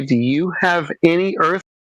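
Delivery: sweet, shiny voice. Showing how one could talk to someone new, nice and shiny voice. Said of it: "I can talk real nice and shiny to you, and and and use this kind of voice".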